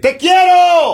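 very high, shrill yell, projected far. Acting out yelling a declaration of love in a food court: pretend shouting a love declaration. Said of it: "gritar delante de todo el mundo".

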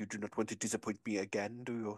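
fake French accent, low, soft. Recapping an episode, quoting a line Juliette said: Juliette's French accent. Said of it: "didn't say that in a French accent".

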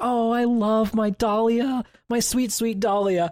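high, slow, sweet, cutesy gushing, stretched out. Retelling how Phoenix acts around Dahlia: cute Phoenix voice. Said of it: "every single time Phoenix would do something cute and be like".

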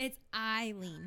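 "Eileen" spelled out slowly and carefully.

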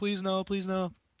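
play-acted, high, begging, pleading voice. Retelling how a son chased his father out of the attic, mock pleading. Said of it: "his son is chasing after him like".

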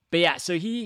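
ordinary talk, nothing marked

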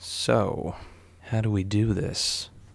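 hushed, very slow whisper with dropped voice. Retelling approaching a man in a bookstore, dropped voice. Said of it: "I drop my voice and I was like".

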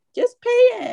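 very high, tearful, crying voice. Quoting the speaker's mom during an argument over paying; imitating mom crying. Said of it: "And she's like crying and stuff".

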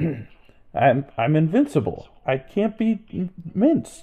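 drawn-out slow delivery. Quoting a game character's line in a Jeff Goldblum voice. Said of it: "I'll try and do it in Goldblum voice".

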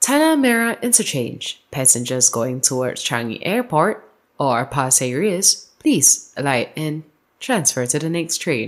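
recorded station-announcement cadence, put-on announcer voice. Repeating a memorized train station announcement for friends: imitating a train announcement. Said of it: "she got the whole intonation".

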